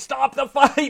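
high-pitched, loud, excited yelling.

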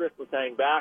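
plain

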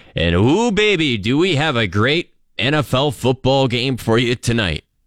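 sarcastic sales-pitch voice, swooping and building up. A presenter introducing tonight's NFL game to listeners; sarcastic. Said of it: "That's my sarcasm".

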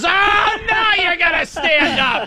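shrill, very high, furious screaming yell. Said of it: "he just starts screaming".

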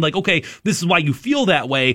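ordinary talk, nothing marked

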